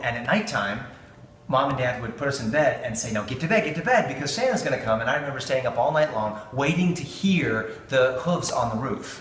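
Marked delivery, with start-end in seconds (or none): none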